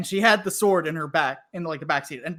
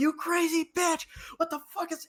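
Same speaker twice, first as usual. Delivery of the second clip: mock yell, way up high and shrill; 12 semitones higher, 5 dB quieter than usual. Retelling how a man ran back to his car: imitating a man yelling. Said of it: "just yelling".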